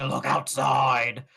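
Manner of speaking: spooky, creepy, eerie put-on voice. Retelling a phone call she receives where a voice speaks; creepy voice. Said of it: "there's like a creepy voice that's like".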